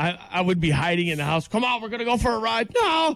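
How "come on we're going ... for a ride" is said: teasing, goading voice, quick and high. Recalling how his brother would chase him down at home, imitating his brother. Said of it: "He would chase me down".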